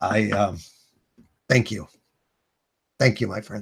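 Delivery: soft, low, moved, slightly emotional voice. Thanking his very first legionnaire, a little emotional. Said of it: "it's getting a little emotional".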